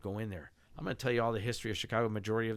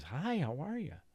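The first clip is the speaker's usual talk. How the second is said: put-on high ghostly girl voice; 7 semitones higher than usual. Retelling what a group heard in the basement: imitating a ghost girl's voice. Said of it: "You'll hear that girl's voice".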